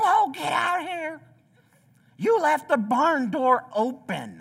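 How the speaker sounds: mock hollering, high-pitched and loud. Telling a true story, imitating bo's dad yelling from his truck. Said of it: "he starts yelling".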